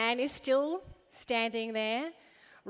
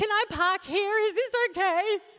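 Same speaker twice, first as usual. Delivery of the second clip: cracking, pitched-up voice; 8 semitones higher, 4 dB louder than usual. Retelling a woman who jumped out of her car by the school: imitating a cracked voice. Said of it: "She jumps out in a cracked voice".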